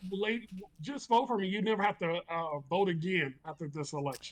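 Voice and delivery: calm, easy, reassuring voice. Retelling what he said to a lady: imitating calm Donald Trump. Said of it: "he was so calm".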